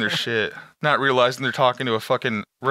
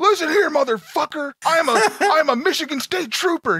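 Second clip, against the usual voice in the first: mock shrill, unhinged furious scream, pitched way up; 4 dB louder than usual. Retelling a prank-call victim's reply, imitating someone screaming. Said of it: "He was losing it, just fucking screaming".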